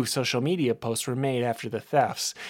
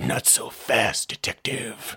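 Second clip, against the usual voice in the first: gravelly, rasping voice; 2 semitones lower than usual. Reading a story aloud, a hidden figure in the back seat speaks: gravelly voice. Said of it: "a gravelly voice said".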